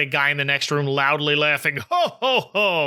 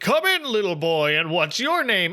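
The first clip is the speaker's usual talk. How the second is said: jolly, cheerful, hearty delivery; 3 semitones higher than usual. Retelling how the DJ invites a little boy in, in Santa voice. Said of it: "in his Santa voice".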